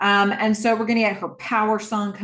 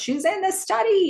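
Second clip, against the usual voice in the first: play-acted piercing, shrill, very high-pitched all-out shout; 11 semitones higher than usual. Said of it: "he shouts".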